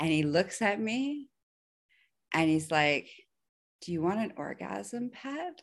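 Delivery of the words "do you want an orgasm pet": very calm, composed, soft voice, pitched up. Quoting what he asked her in that moment, retelling a calm question. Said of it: "Just really calmly".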